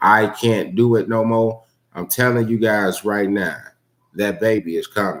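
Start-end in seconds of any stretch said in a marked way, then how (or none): none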